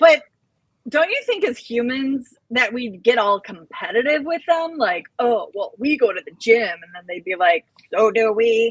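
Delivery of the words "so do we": otherworldly alien voice. Imagining aliens competing with humans at the gym, in a Conehead voice. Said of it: "I just sounded like a cone head".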